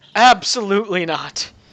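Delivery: loud, high-pitched voice. The narrator voices Aurelian chiming in once more: Aurelian's character voice. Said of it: "Aurelian chimes in once more".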